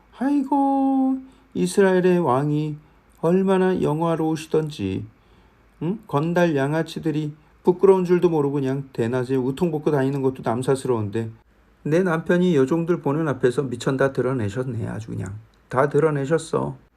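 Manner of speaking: biting, scornful, sneering sarcasm, pitched high. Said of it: "하면서 비꼬면서 말하는 거예요".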